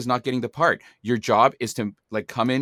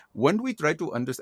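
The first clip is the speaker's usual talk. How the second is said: full, put-on East Indian accent; 4 semitones higher, 4 dB quieter than usual. Retelling an audition where the role called for one: east indian accent. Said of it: "And I'm doing this whole accent".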